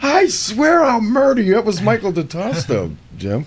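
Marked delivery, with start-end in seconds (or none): 0.0-1.6 acted, shrill, very high screaming. Recalling the forklift stuck in the field, retelling a scream. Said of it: "And I'm screaming".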